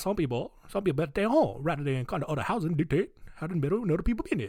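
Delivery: put-on Cajun accent. Voicing the words of a man from New Orleans: Cajun accent. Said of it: "this would be a great opportunity to unleash Cajun accent".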